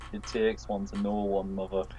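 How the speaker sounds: very low, slow mutter under the breath. Acting out a scene with the others, the Fat Controller replying to Mother: Fat Controller muttering under breath. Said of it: "Fat Controller just very quietly under his breath".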